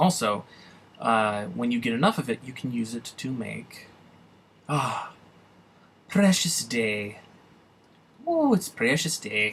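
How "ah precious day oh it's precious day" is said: weird mix of Irish and Scottish accent. Explaining uses for a material, slipping into a weird Irish-Scottish accent. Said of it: "I busted into a weird amalgamation of Irish and Scottish accent".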